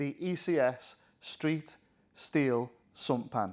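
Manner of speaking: very slow, each word deliberate. Naming a product in a training video, saying it slowly. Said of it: "I'm gonna have to say this slowly".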